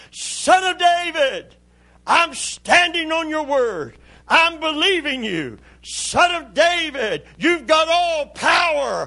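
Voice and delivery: imitated loud crying out. Retelling a blind man calling to Jesus over the crowd: imitating crying out. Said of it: "he begins to cry out".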